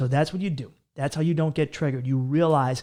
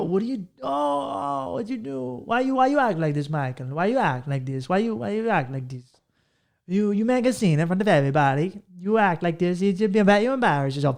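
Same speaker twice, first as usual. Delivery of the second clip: put-on indignant voice; 6 semitones higher than usual. Speaker acts out how they react when you get in their face, imitating indignant people. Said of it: "They go".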